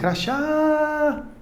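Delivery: very high, last syllable "chá" drawn out long. Warning someone about their badge: shouted 'crachá', stretched last syllable. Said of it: "Eu quero gritar crachá. Qual sílaba você estenderia? ... A última, é uma oxítona".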